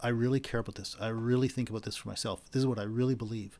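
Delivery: ordinary talk, nothing marked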